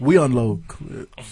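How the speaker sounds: quiet, understated, wannabe tough-guy gangster voice. Retelling a player's postgame quote: imitating Josh Norman talking quiet like a gangster. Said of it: "That's exactly how".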